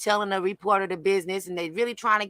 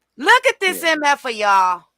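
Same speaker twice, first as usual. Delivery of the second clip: furious laughter through the words, loud and high; 6 semitones higher, 6 dB louder than usual. Reacting to a paused news video of a man: angry laughing while talking. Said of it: "I'm sorry for laughing at myself, but I'm angry".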